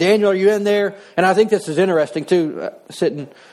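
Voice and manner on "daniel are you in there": mock scream, higher pitch. Retelling how the king runs out at morning: imitating the king screaming. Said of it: "And he's screaming".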